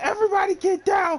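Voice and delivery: very high, menacing, threatening shouted yell. Acting out a masked bank robber taking hostages: acted robber yelling. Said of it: "They start yelling".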